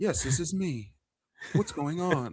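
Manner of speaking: polite, proper phone voice, high and slow. Retelling a phone call to a friend who was at work: imitating Ed's work phone voice. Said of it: "He talking like Samuel, Sam, uh, Ash Ketchum on the phone".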